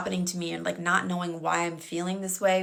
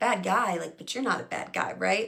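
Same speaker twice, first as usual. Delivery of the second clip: playful, joking, teasing tone. Retelling a remark made to him while lying on his chest, retelling a joking tone. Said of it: "in like a joking tone".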